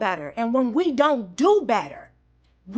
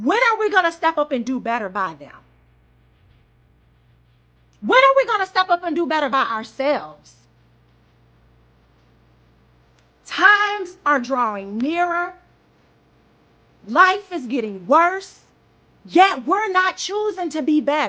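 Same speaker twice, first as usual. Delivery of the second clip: furious, passionate, impassioned angry delivery; 3 semitones higher than usual. Speaking out about what we teach our children, furious and passionate. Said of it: "I'm furious and passionate about this".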